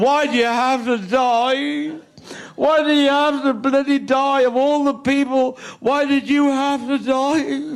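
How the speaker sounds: put-on sobbing, out-of-control grief, "die" drawn out. Retelling crying over a headstone in a graveyard, re-enacting their own shouting. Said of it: "And I'm shouting".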